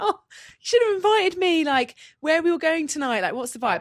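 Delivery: mock keen, very chatty, eager small-talk tone. Retelling meeting other influencers: imitating own very chatty self. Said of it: "being very chatty".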